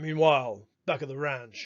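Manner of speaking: put-on fake American accent. Giving an example of a discourse marker, in a faux American accent. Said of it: "faux American accent there".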